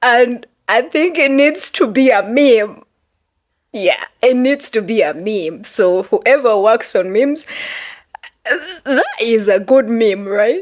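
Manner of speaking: talking through laughter. Joking about a video clip that should be a meme, laughing while talking. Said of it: "I'm laughing so hard and I can't even help it".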